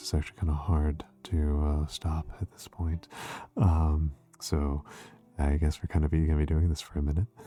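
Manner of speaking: lingering ASMR-style voice. Streamer admits being stuck in it after showing the normal voice: ASMR voice. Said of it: "now I'm kind of stuck in A S M R voice".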